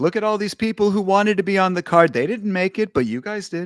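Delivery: loud, high-pitched put-on boasting. Imagining what Donald Trump would say about the card: Donald Trump impression. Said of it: "That was a pretty good impression".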